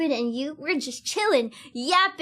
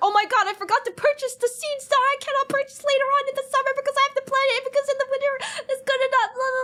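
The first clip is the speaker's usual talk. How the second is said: put-on panicked, rushed voice, higher; 12 semitones higher than usual. Retelling forgetting to buy seeds in a game: imitating own past panic. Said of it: "panicking, going like".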